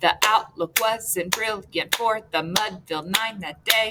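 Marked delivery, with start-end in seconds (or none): none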